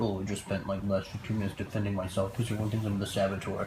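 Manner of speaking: low, quiet, flat impression voice.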